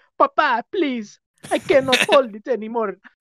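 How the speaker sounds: kid's voice, fake Italian accent. Imagining someone's future son talking to his papa, imitating an Italian accent. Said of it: "why is your son Italian?".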